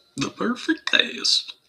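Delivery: poorly done high-pitched cartoon voice. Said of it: "That was a bad impression of Goofy".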